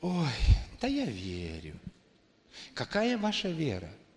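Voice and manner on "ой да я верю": slow, put-on sigh through the words. Speaker acting out a typical reply to a question: imitating a sighing reply. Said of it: "такой вздох".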